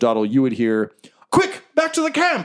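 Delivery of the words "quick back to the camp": shrill, very high-pitched yell. Voicing fleeing enemies calling out mid-fight: yelling to friends. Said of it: "You can hear them kind of yelling to their friends".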